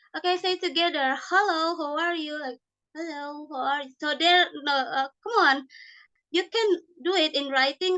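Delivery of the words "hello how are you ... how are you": imitated low voice. Describing students repeating after the teacher, imitating their low voice. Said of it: "their voice kind of low".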